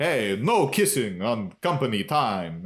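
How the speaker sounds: put-on vampire accent. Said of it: "he's doing the accent when he talks to them".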